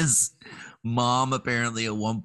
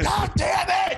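put-on screaming, higher pitch. Retelling a father's reaction to keys flushed down the toilet: imitating Tom screaming. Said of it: "screaming into the sky".

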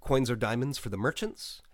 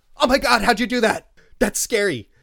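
put-on shocked, freaked-out shriek, very high and loud; 11 semitones higher, 12 dB louder than usual. Retelling a woman's reaction to a guessed name: imitating someone freaking out. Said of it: "she totally flipped out".

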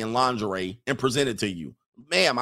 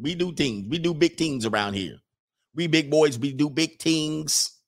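boastful, put-on Jamaican accent. Giving a shout-out to Jamaican listeners, trying a Jamaican accent. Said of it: "Is that Jamaican? Do I sound good?".

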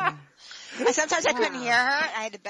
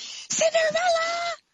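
mock screaming, higher pitch. Retelling a character calling out in a restaurant: imitating someone screaming. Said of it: "she starts screaming across the restaurant".

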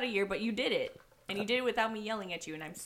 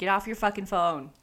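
ordinary talk

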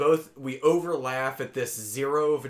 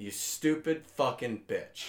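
mock exasperated rant, quieter; 5 dB quieter than usual. Acting out what they would say to Lila: acting out an annoyed rant. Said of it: "I'd be so fucking annoyed".

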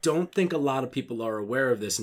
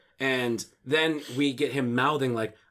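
plain

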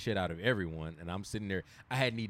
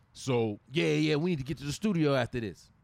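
put-on East Coast accent, higher and louder; 6 semitones higher, 5 dB louder than usual. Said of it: "he had an East Coast accent".

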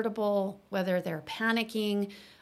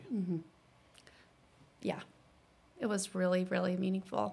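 soft, tearful, emotional, choked-up voice; 6 dB quieter than usual. Answering the other speaker's question, while tearing up. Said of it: "You're tearing up".

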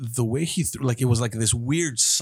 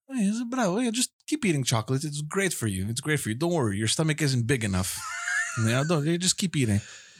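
put-on very calm tone, much higher pitch; 2 semitones higher, 3 dB quieter than usual. Recounting eating desserts at the sister's house, the speaker quotes someone's remark: imitating a very calm tone. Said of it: "Like in a very calm tone".

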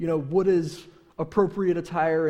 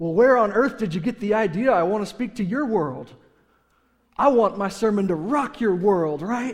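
eager, enthusiastic, loud, bold, blurted out; 3 semitones higher, 5 dB louder than usual. Retelling a retort blurted back at a critic: retelling an enthusiastic bold retort. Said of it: "it sounded very enthusiastic and bold".

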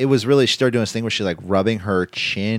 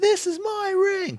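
very high, slow whisper-scream; 3 dB quieter than usual. Imitating wrestlers who yell without raising volume: imitating a whispered scream. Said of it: "say it like they're screaming it".

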